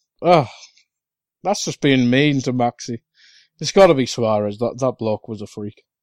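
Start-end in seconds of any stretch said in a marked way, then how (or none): none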